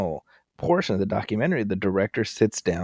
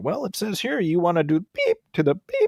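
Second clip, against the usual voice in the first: high, swooping, sing-song reading aloud; 9 semitones higher than usual. Retelling a host reading from a transcript: imitating Chris Hansen. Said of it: "And then he'd pull out".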